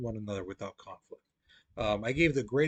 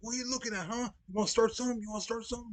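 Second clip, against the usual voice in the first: high, pitched-up, in-your-face yelling; 9 semitones higher than usual. Retelling how a guy yelled a challenge: imitating a guy yelling. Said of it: "This guy is yelling at me".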